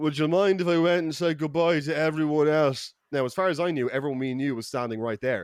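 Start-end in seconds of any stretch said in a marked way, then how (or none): 0.0-2.9 put-on drunken slur, words running into each other. Speaker retells his buddy Andy leaning over to him, imitating Andy's slurred speech. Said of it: "he slurs to me".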